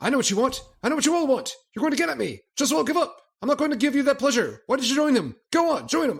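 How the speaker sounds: mock over-the-top, shrill, very high-pitched shouting. Quoting a character's reading from episode three: imitating Robson shouting. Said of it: "shout, shout, shout, shout, shout".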